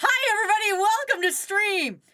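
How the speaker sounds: high-pitched, loud shouted stream of words. Opening a live stream, the streamer greets chat, yelling. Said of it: "She's yelling already".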